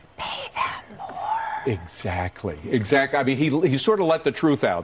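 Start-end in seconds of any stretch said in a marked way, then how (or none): 0.2-1.4 put-on whisper, quieter. Retelling what the president said the other day, do President Biden whispering. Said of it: "he whispered".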